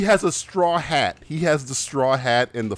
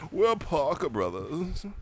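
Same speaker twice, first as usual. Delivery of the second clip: haughty, stuck-up, snooty voice, hushed; 3 semitones higher, 7 dB quieter than usual. Joking about board game companies, the speaker voices Parker Brothers in a mock-snooty voice. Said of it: "this sounds like the snooty fucking".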